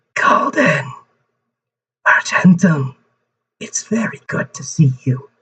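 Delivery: sickly, echoing, distant-sounding, drawn-out voice. Storyteller voicing a long-unheard voice from the clock, sickly and echoey. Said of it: "But sounding sickly and echoey".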